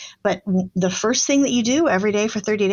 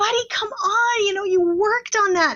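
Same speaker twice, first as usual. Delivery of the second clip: fed-up, exasperated voice that keeps climbing; 11 semitones higher than usual. Retelling words to a son who forgot his project: imitating own exasperated rising voice. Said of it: "my voice is rising. I have that exasperated tone".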